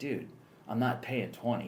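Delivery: ordinary delivery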